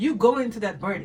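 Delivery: loud mock American English accent.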